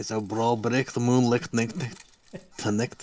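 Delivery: put-on Scottish accent. Asked to do a Scottish accent, speaker repeats a saying they were told, Scottish accent. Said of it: "Can you do a Scottish accent".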